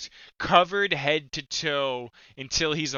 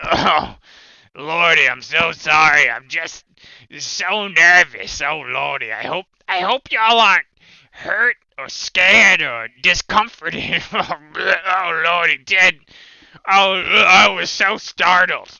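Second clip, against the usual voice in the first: booming, slow, frog-like croaking voice; 10 dB louder than usual. A storyteller voices a floating skull speaking to the players, in a froggy voice. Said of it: "in like this froggy voice".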